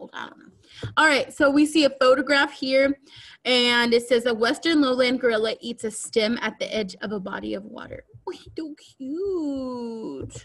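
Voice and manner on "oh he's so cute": soft pet-talk voice. Reacting to a photo of a gorilla in the voice used for their dog. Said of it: "Why did I do that voice? I usually do that voice with my dog".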